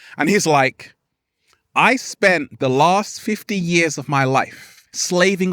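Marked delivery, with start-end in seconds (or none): none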